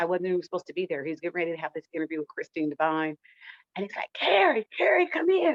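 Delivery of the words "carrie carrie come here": very high, slow, raspy calling voice. Retelling how G called Carrie over before an interview, imitating G's raspy voice. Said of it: "with that raspy voice".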